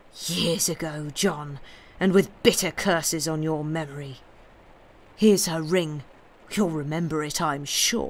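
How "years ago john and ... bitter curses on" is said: usual speaking voice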